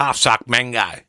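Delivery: Australian-accented speech. Prompted to say the phrase again, in an Australian accent. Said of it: "you got to say it with the Australian accent".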